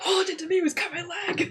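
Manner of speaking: shrill, very high shout. Voicing a character splashed with holy water: yelling in character. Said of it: "He just yells".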